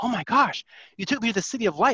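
put-on thrilled, excited, high-pitched outburst. Retelling how he came back from the vision: imitating an excited man. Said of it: "he was so excited".

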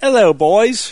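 put-on English accent. Imitating a friend who moved to London: imitating Rebecca with English accent. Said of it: "talking like".

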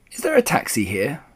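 ordinary delivery, nothing marked

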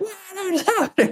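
acted-out tearful shriek, pitched very high. Retelling a first therapy session over Zoom: imitating own past screaming. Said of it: "I'm crying and I'm smashing pillows and I'm screaming".

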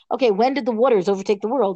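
plain

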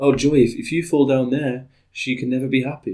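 mopey, sad, utterly defeated cartoon voice. Quoting a line from the film, doing a Sadness impression. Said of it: "That was a good impression of Sadness".

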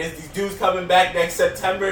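ordinary talk

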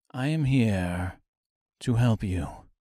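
deep, slow, dripping, syrupy drawl. Narrator voicing a stranger reassuring Dorothy, in a deep, syrupy, slow voice. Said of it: "His voice was deep and syrupy, the words slowly dripping".

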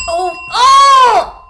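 high, loud excited yelp.

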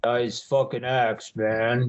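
very deep, out-of-it dude voice, dropped very low. Retelling what a wasted guy told him, in a very deep voice. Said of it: "he's got a very deep voice".

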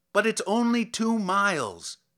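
very high, loud, pleading, imploring voice. The doctor, told he cannot leave in such weather, replies imploringly. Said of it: "the doctor was saying in an imploring voice".

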